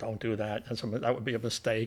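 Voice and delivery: soft, low, hushed whisper. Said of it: "They're, like, whispering to him".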